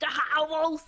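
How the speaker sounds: loud, laid-on, put-on French accent. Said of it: "don't make fun of my French accent".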